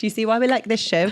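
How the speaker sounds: put-on British accent. Joking with the other speaker about the show: put-on British accent. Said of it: "using my British accent".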